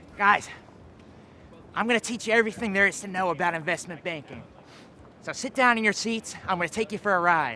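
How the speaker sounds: put-on, imitated mad-genius man's voice. Speaker impersonates a man he calls a mad genius: Murphy impression. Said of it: "I think I can do a pretty good impression of, of him".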